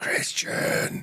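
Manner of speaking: put-on whisper-yell. Retelling a brother calling from the door: imitating a whisper-yell. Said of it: "whisper yelling".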